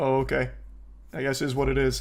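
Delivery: put-on very flat, unbothered, quiet monotone. Acting out their own reply when told on stream they're short, mimicking own monotone reply. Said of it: "just a very monotone".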